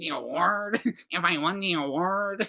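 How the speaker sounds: put-on nasal voice. Imitating a boy from a clip they keep replaying: nasal voice. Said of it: "he's so nasally and like sucks in".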